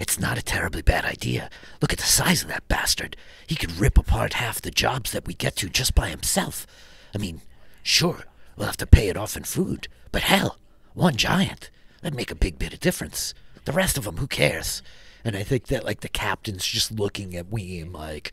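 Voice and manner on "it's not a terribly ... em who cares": whispered dwarf character voice. Voicing a dwarf urging the captain about the giant: whispering dwarf. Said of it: "one of the dwarves is whispering to the captain".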